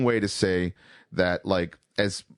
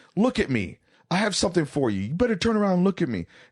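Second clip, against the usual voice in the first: shrieking scream, very high; 9 semitones higher than usual. Retelling how a coworker pranked them: imitating Walter screaming. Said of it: "Walt screams".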